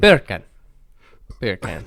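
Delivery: put-on Indian accent. Trying out how a phrase sounds in different accents, Indian accent. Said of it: "That's an Indian accent".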